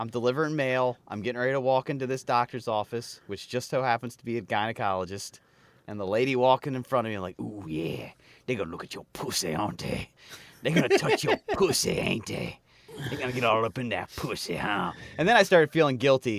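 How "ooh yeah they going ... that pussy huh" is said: low-pitched put-on character voice. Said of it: "doing that same voice in my head".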